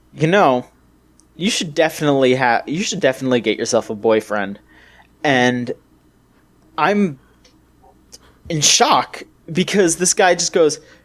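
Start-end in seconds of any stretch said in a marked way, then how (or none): 0.2-4.6 play-acted, straight-faced, completely sincere and earnest tone. Retelling what a man said to them: imitating a dead-serious tone. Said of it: "in dead seriousness looks at me and goes".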